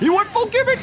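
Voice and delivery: very high, loud, excited gasping shout.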